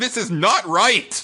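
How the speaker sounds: put-on yelling, high-pitched and drawn out. Complaining about a game's main character, yelling at the characters. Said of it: "I'm just yelling at these characters".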